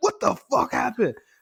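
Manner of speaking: acted-out, high-pitched, loud yell. Telling how they yelled at the bank, the speaker acts out retelling their own yell. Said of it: "So I yelled at the bank".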